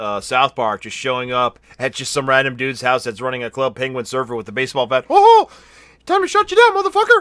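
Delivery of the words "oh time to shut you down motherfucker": squeaked out, high-pitched and loud. Speaker acts out Mickey Mouse showing up at a random guy's house: Mickey Mouse voice. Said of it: "I was not prepared for [name]'s Mickey Mouse voice".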